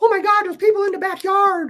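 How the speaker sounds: acted, very high, frantic, panicked screaming. Retelling tactical units coming over the back fence: imitating girls screaming. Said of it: "The girls start screaming".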